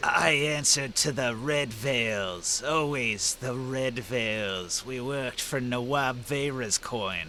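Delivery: rasping, raspy, hoarse undead voice. Game master answering the players' question as an undead figure, raspy undead voice. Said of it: "In, in a raspy undead voice, he says".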